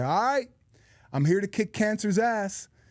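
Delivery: mock confident, defiant voice. Retelling how a woman in treatment greeted everyone: imitating a confident fighting attitude. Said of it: "came in with this attitude like she was gonna win".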